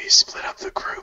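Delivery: breathy, barely voiced whisper from several voices. Retelling what people said about splitting up the group: imitating a whisper.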